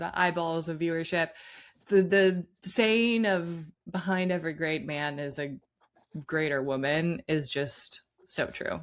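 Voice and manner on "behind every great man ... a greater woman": usual speaking voice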